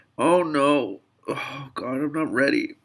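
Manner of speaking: crying while talking. Starting a Tuesday morning recording and admitting not being ready, crying while talking. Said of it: "I'm already crying now".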